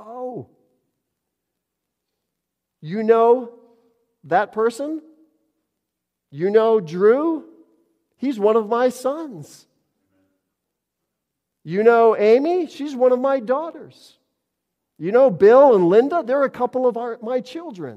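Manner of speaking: put-on delighted voice. A speaker acting out how God names his children, retelling delighted speech. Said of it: "with delight in his voice".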